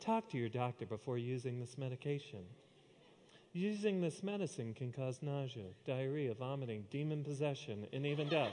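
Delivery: soft, gentle, soothing announcer voice. Speaker mimics the side-effects voice at the end of drug commercials, soft soothing drug-ad voice. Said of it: "that soft, soothing voice that comes on and tells you the side effects".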